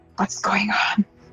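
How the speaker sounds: soft, hushed, breathy whisper. A player character whispering to a bird, whispering. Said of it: "I'm trying to whisper".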